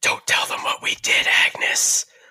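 eerie, creepy, hushed and breathy whisper. Retelling a movie scene, the voice through the crack of the door whispering. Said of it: "And it starts whispering".

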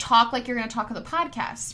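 ordinary talk

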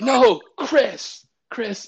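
shrill, very high, loud screaming call. Retelling to the listener how they screamed his name, imitating someone screaming. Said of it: "And you're screaming at me again".

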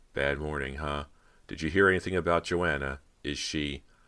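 ordinary delivery

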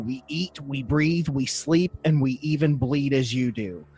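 ordinary delivery

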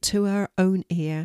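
ordinary delivery

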